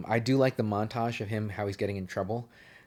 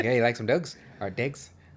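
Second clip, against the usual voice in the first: poor put-on Irish accent. Speaker demonstrates how their Irish accent attempt comes out: Brad Pitt in Snatch impression. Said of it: "I just sound like Brad Pitt from fucking Snatch".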